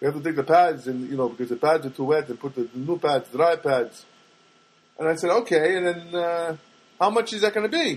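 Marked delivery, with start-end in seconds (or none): 0.0-4.0 good put-on Armenian accent, male. Quoting what a man told the speaker, in a good Armenian accent. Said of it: "that's a good Armenian accent".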